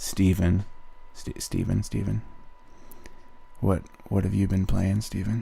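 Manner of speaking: super monotone, dead level, flat droning voice. Playing a bit, asking steven a question in a super monotone voice. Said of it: "I'm just gonna go super monotone".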